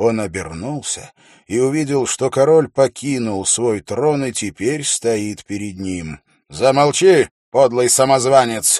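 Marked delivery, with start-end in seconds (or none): 6.5-8.8 furious, loud, angry shout. Narrator voicing Ferris on the field, an angry shout. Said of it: "зло крикнул Феррис".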